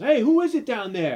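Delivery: put-on loud yell. Recapping a movie scene, the speaker acts out the husband's yell. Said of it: "The husband yells".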